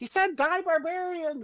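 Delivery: very high character voice, high in the throat. Voicing Splug calling out in a fight: voicing Splug. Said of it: "You hear Splug says".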